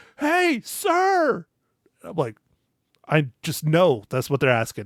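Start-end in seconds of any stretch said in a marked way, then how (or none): 0.2-1.5 put-on very high, loud, hollering little old lady voice. Retelling a little old lady calling out from the aisle: imitating a loud little old lady. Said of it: "some little old lady get real loud and be like".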